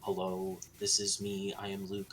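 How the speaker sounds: resonant voice from the chest. Explaining mixed voice, demonstrating speech in a resonant chest voice. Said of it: "I am talking in my chest voice".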